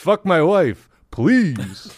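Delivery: very slow, every word drawn out, comic pleading tone. Joking with the others, doing a new character: polyamorous Rodney Dangerfield voice. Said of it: "my new character is, um, polyamorous Rodney Dangerfield".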